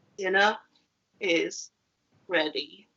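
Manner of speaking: downcast, sad, very low-pitched voice. Host demonstrating emotions for viewers to guess, saying the line sad. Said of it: "you sounded really sad".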